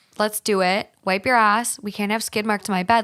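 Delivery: ordinary talk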